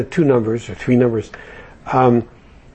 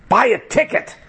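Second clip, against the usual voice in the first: mock frustrated, fed-up outburst, pitched very high; 11 semitones higher than usual. Telling a story, acting out a mock-frustrated, exasperated voice. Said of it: "a frustrated, exasperated voice says".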